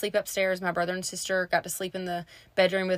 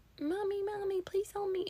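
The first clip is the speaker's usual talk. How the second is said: put-on little girl voice, much higher, quieter; 13 semitones higher, 7 dB quieter than usual. Retelling calling out to mom for help, in a little girl voice. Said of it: "It was like a little girl voice".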